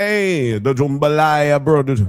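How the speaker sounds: Jamaican accent. Talking with others at the table, put on a Jamaican-sounding accent. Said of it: "why are you sounding Jamaican?".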